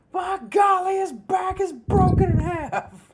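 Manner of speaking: put-on shrill, booming sports play-by-play announcer voice. Imagining how a commentator would call the match: imitating Jim Ross calling a match. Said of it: "Jim Ross would have legit died at ringside".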